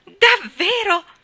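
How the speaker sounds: very high, loud, delighted happy cry. Narrator reads a character's reply to news of a visitor, happy exclamation, smiling. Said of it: "Esclamò Colin sorridendo felice".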